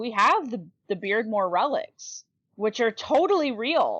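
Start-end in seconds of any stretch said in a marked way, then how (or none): 2.5-4.0 thick, knowing sarcasm with swooping pitch. Listing supposed relics to co-hosts, sarcastic. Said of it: "if you can't hear the sarcasm in my voice".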